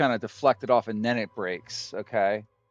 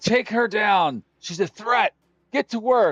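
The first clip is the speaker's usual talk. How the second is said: very high, loud shouting; 11 semitones higher, 5 dB louder than usual. Voicing a foreman who orders a bandit to attack: foreman shouting orders. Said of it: "he shouts".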